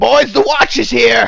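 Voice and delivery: very loud, shrill, high, raspy yell. Voicing a character who looks at the party: yelling in character. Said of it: "he yells".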